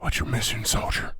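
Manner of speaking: close whispered voice. Voicing an unseen figure whispering into a player's ear: whispering in your ear. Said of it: "somebody's whispering over your right soldier".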